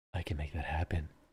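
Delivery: barely audible, very quiet, hushed half-whisper. Retelling leaning in across the table to the boss: imitating own half-whisper.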